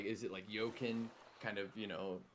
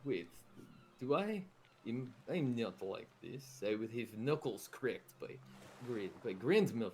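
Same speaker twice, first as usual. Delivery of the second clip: protesting tone, delivered in character. Describing a character's reaction to a curse, in character as Bao. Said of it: "and he's like".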